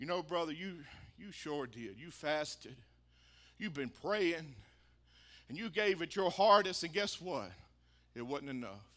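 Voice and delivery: eerie, very quiet, very deep creepy voice. Preacher voicing a remembered voice that told him his efforts weren't enough, creepy voice. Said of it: "creepy voice".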